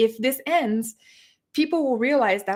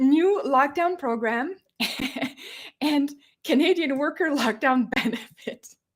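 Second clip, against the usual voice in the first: words broken up by giggles, talking through laughter; 3 semitones higher than usual. Reading out a government program name, laughing while talking. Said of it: "I can't even get through this without laughing".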